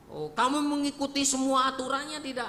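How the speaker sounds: high-pitched, probing, inquisitive voice.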